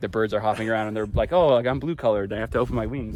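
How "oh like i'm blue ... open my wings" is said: normal talking voice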